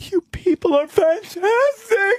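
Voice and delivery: tearful, overcome, gushing, very high voice. Retelling what a woman said to the soup kitchen workers, imitating someone tearing up. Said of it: "her eyes get all watery and her lip starts quivering".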